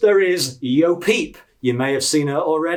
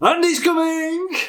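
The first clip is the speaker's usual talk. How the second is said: ringing, very high, shrill shout; 11 semitones higher than usual. A toy showing newcomers the warning to shout when Andy comes, shouting. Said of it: "you need to shout".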